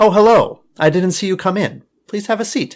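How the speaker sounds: high woman's voice. Acting a dialogue between a student and a professor, voicing the professor in a woman's voice. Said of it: "I will try to make the professor um, sound more like uh, a woman".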